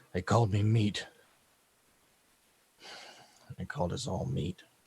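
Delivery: low, soft mutter under the breath. Voicing a downed man on his back: muttering under his breath. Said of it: "rolls over onto his back and under his breath goes".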